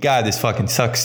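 ordinary talk, nothing marked

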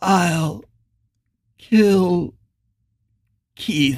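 strained speech, each word forced out with effort. Narrating fiction, a crumbling ghost finally manages to speak: each word a great effort. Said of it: "as if each word cost him his life all over again".

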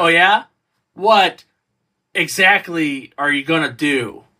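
slow, sloppy, halting, choppy delivery. Criticizing a film, mimicking a character's line in a choppy, sloppy line reading. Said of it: "That choppy and that sloppy".

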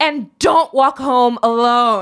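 high, drawn-out calling out. Retelling a show scene where a mother calls from a car window: imitating someone shouting. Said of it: "she shouts out of the window".

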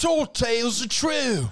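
very high, put-on Australian accent. Asked to say it in an Australian accent. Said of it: "say it in Australian accent".

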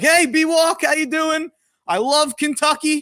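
very high, drawn-out booming shout. Retelling calling out to b-walk in a store aisle, retelling booming out his voice. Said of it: "booming out my voice".

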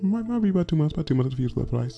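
high, quiet cartoon voice. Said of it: "my terrible imitation of Stewie from Family Guy voice".

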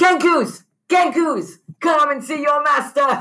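screaming.

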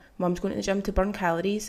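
plain

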